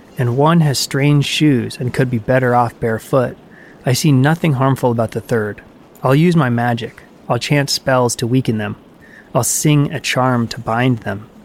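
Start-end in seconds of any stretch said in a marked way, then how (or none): none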